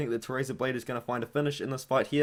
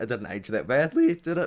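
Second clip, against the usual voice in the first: breaking, cracking voice; 3 dB louder than usual. Speaker discussing a fighter's early career, voice cracking. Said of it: "Voice crack".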